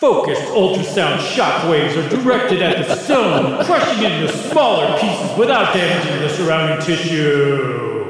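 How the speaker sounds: monster truck commercial announcer voice, words stretched. Reading a medical sentence aloud as if hyping a show: monster truck ad announcer voice. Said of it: "if you read it like a monster truck ad announcer".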